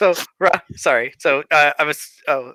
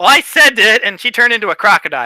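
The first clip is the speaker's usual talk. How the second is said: normal talking voice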